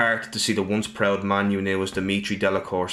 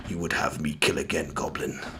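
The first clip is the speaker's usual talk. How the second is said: deep, low, rough, gravelly, hushed voice; 5 semitones lower, 5 dB quieter than usual. Storyteller voicing a character who speaks to a goblin, in a low, gravelly voice. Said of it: "he speaks in a low, gravelly voice".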